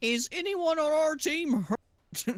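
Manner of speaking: put-on shrill, very high, loud yell. Voicing a character who checks whether teammates are hurt: in-character yell. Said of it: "he yells".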